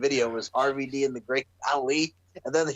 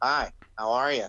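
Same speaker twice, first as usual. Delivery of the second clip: slow, dull, lifeless voice, drawn out, utterly bored; 2 semitones lower than usual. Comparing a changed wrestler to a cartoon figure: boring Squidward voice. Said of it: "he's like Squidward".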